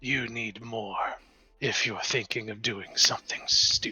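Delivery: calm, composed, deep, even-toned voice. Voicing a tall dragon woman addressing the party: calm but deep voice. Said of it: "In a calm but deep voice".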